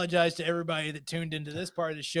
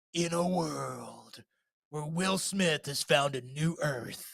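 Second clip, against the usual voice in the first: soft, theatrical movie-trailer announcer voice; 2 semitones lower, 5 dB quieter than usual. Describing the guy who reads the theatrical trailer on the phone line: movie trailer announcer voice. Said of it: "they have the guy read the theatrical trailer".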